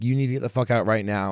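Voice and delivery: ordinary delivery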